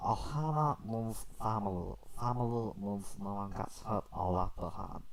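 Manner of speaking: slowed cartoon alien voice. Showing off voices right after a Goofy impression, doing a Stitch voice. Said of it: "I can also do uh, Stitch as well".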